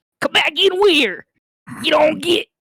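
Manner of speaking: put-on bugbear monster voice. Narrator doing the voices, speaking as a bugbear: bugbear monster voice. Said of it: "I'm gonna do this with the fucking voices".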